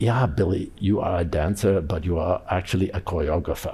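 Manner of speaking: put-on soft, strong German accent, laid on thick. Retelling what the speaker's first dance teacher declared one day, strong german accent. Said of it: "in a strong German accent".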